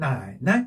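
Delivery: low half-tone 나, lifted 이. Tone lesson, neutral tone after nai: first nai half, second nai higher. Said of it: "앞에는 반만 읽어줘. ... 뒤에를 살짝 높여준다".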